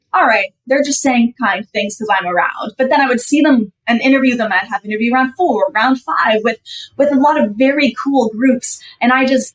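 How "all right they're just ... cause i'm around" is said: ordinary delivery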